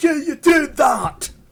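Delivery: loud, high, slow yell. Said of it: "someone's yelling at their screen going".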